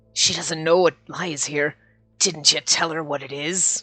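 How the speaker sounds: put-on drunk Irish pirate accent. Reading a story aloud, the speaker voices Yang addressing another character, as a drunk leprechaun pirate. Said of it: "Now he sounds like a drunk leprechaun pirate".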